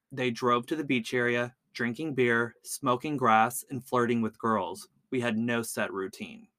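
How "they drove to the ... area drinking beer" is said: plain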